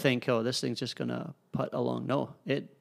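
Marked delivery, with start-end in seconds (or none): none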